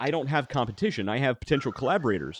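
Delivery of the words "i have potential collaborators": normal talking voice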